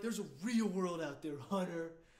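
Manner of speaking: mock condescending, patronizing tone. Quoting the other speaker's past remark back at them, mock-condescending. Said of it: "you were so condescending to me".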